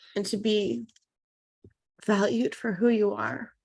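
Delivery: tearful, emotional voice on the edge of tears. Guest answering an interviewer's question, emotional and crying. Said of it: "I'm sorry I'm so emotional".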